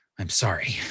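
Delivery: muttered quietly under the breath. Voicing a character mid-fight, drawing another arrow: said under his breath. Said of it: "he says under his breath".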